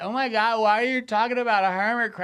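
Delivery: put-on high, loud, tipsy woman's drunk voice. Retelling a drunk woman heckling a stand-up set: imitating a drunk woman heckler. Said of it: "drunk bitch".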